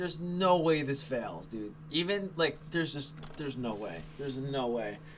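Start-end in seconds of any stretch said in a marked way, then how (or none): 0.0-1.7 slow, drawn-out, confident call. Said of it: "did you hear the confidence in my voice?".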